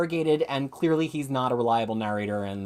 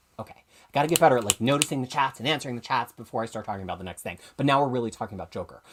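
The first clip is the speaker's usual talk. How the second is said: rushed, very fast rambling. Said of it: "am I talking way, way too fast?".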